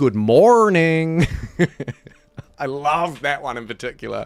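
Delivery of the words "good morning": loud, hard American R stuck on "morning". Describing American accents that stress the R, the speaker does an American accent stuck on R. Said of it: "they really get stuck on the R".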